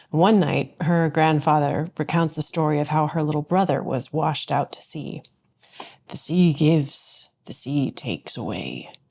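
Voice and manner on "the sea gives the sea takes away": solemn, weighty, low-pitched Irish brogue. Retelling a grandfather's line from an Irish fairy-tale movie, in a grave Irish brogue. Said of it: "in this grave Irish brogue".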